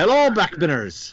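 put-on Scottish accent. Starting to read a listener email aloud: put-on Scottish accent. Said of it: "I don't think I could do this whole in a Scottish".

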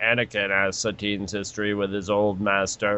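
computer voice, robotic, low, quiet, flat read-out.

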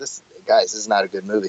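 ordinary talk

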